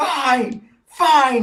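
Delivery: very high-pitched, shrill yell. A character gives in during a yelling argument: shouting. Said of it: "he shouts".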